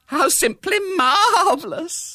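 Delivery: squeaked out, very high-pitched exclamation. A narrator reads Bella's line after Mrs. Brown groans, squeaking. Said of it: "squeaked Bella".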